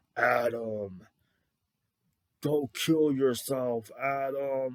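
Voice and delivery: deep, ominous cartoonish voice, one word drawn out. Recalling an ominous voice in a movie, imitating a deep booming voice. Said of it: "really deep booming voices".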